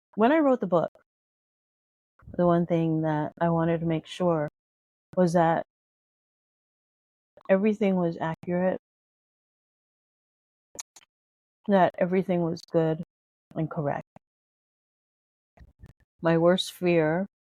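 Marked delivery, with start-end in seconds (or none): 0.2-14.1 speaking with a cough drop in mouth. Author addressing listeners while fighting a cough, talking with a cough drop in mouth. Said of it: "I have to talk with a cough drop in my mouth".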